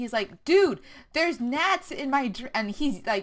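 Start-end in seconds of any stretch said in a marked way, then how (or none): 0.4-2.5 put-on friendly but loud, pitched-up yell. Retelling a complaint to the bartender about gnats: imitating someone yelling. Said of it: "he's yelling".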